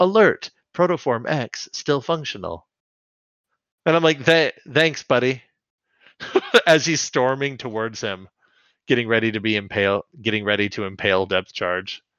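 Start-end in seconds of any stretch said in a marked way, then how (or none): 0.0-2.7 mechanical, robotic computer voice. Recounting a scene, the speaker quotes a downed character's computer in a computer voice. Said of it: "his fucking computer voice says".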